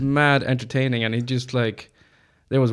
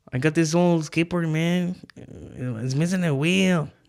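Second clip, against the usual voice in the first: put-on Mexican accent, pitched up; 5 semitones higher than usual. Repeating a man's quoted words that another speaker retold, put-on Mexican accent. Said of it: "we're Mexican".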